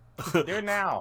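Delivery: yelling from outside. Playing a character who calls from outside to do it again: yelling from outside. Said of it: "I yell from outside".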